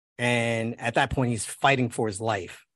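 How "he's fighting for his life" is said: normal talking voice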